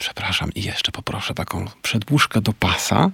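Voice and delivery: hushed, low, quiet voice under the breath. Retelling what he said to a flight attendant on a plane, hushed voice. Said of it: "ściszonym głosem mówiłem".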